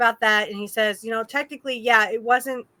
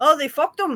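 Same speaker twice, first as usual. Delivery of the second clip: put-on British accent, higher; 5 semitones higher than usual. Retelling what Bulldog said when it happened, attempting Bulldog's accent. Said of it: "I can't do the accent".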